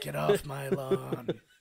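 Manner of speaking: fake gruff movie tough-guy voice. Joking about a movie novelization cover: Clint Eastwood impression. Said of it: "great at it".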